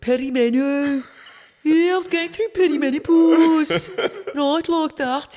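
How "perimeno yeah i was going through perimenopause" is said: put-on Birmingham accent, higher and louder. An interview guest demonstrates how she likes saying the word, in a brummie accent. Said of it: "I like saying in that in a Brummie accent. Say it with me".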